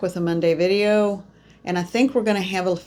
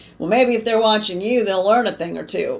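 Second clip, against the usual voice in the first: put-on cheeky, sassy, knowing tone; 3 semitones higher, 3 dB louder than usual. Repeating what a spirit's voice just said to them, mock-sassy spirit voice. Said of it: "I just heard a very sassy voice say".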